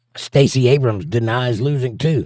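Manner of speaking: ordinary talk, nothing marked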